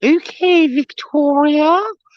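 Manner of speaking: very high, la-di-da put-on posh voice. Retelling how people answer when she corrects her name, in a put-on posh voice. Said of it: "in these posh voices".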